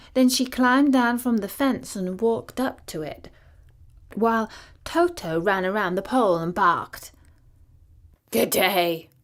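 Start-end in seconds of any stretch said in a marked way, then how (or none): 8.3-8.9 rough, husky tone. Reading a story aloud, the Scarecrow greets the girl: husky Scarecrow voice. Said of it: "in a rather husky voice".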